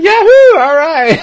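very loud, very high, excited, celebratory yell. Recalling celebrating alone after checking nobody was around, retelling an excited shout. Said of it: "shouting like".

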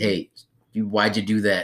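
imitated stern telling-off voice. Retelling how a teacher told a classmate off: imitating a teacher telling someone off. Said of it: "she was telling him off".

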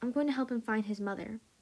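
usual speaking voice

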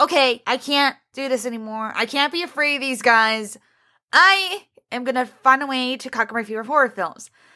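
ordinary talk

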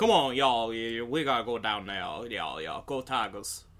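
put-on Cajun accent. Discussing Creole versus Cajun accents, a speaker demonstrates Gambit's Cajun accent. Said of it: "Like that".

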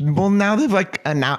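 voice breaking mid-line, cracking and jumping high. Chatting with a co-host on a podcast, voice cracking. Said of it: "voice crack".

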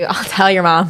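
stern, scolding schoolteacher voice. Joking about a warning just said: imitating a scolding teacher. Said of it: "a teacher saying".

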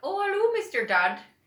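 bad leprechaun Irish accent, very high and very loud. Imitating how Irish people would say the word Dad, in a bad put-on Irish accent. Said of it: "like what Irish people would say. They'd be like".

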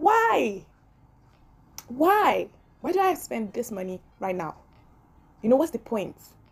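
upset, frustrated outburst. Retelling own reaction to a shaking laptop: retelling own upset outburst. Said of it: "I was so upset".

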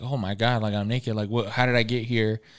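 acted, mock-frightened, scared-sounding voice. Retelling a story, acting out the man waking up naked, imitating someone scared. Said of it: "he was all scared".

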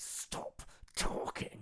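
put-on furious, angry voice. Retelling a dad silencing his talkative kid: imitating an angry dad. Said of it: "he sounded so angry".

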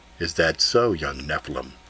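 smooth, soothing yet commanding, very low voice. A large man answers the confused young Ethan, silky, deep, commanding voice. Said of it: "said a silky, deep voice that was soothing and commanding".

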